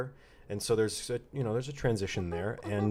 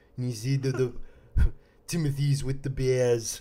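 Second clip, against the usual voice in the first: narrating like a film documentary narrator; 4 semitones higher, 4 dB louder than usual. Recommending a bear documentary, showing how its narrator talked: Werner Herzog impression. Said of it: "he's the guy who talked like this".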